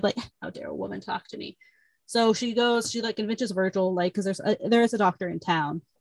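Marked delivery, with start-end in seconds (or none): 0.0-1.6 mock super-annoyed voice, much quieter. Retelling a story, voicing a man annoyed that a woman talks to him, mock super-annoyed. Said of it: "he's just like super annoyed".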